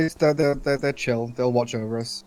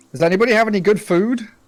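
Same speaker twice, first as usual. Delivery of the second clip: slightly raised, pitched-up voice, calling out; 8 semitones higher, 6 dB louder than usual. At nighttime, a player's character calls out to anyone nearby in a slightly elevated voice. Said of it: "in like a slightly elevated voice".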